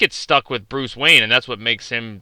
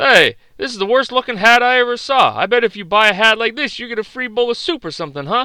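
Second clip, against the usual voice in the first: pitch raised way up, wisecracking; 12 semitones higher than usual. Retelling a Caddyshack scene at the pro shop: Rodney Dangerfield impression. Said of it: "they're both Rodney Dangerfield".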